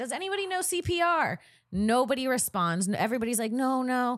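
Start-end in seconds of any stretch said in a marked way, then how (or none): 0.0-1.4 re-enacted yell, much higher pitch. Retelling an emergency where nobody knew CPR; retelling a yell for help. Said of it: "I start yelling".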